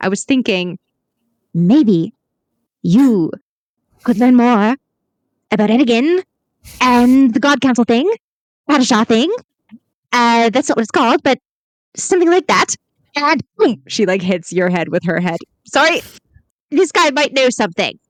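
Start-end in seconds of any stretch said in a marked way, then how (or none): 1.5-9.3 deliberate, each word set apart, one by one. Acting out a woman leaning her head close to Glimkey's, in a lowered voice, word by word. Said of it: "she lowers her voice".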